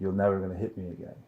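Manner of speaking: ordinary delivery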